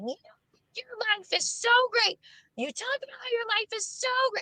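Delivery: put-on, very high, furious, flipped-out yell. Retelling how a relative yelled during an argument: imitating someone yelling. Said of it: "yelling at me".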